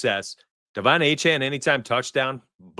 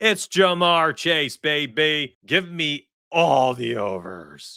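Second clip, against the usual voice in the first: put-on slow, weird, theatrical dramatic voice with "baby" stretched out; 3 semitones higher than usual. Picking a receiver to back, the speaker switches to a weird dramatic voice. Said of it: "That was a weird voice".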